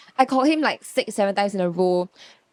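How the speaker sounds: ordinary delivery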